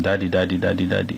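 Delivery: ordinary talk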